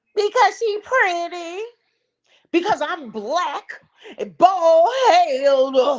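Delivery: high sneering voice with the word "head" drawn out. Mocking how another person answered a question: mocking imitation of someone. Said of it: "You sounded just like that".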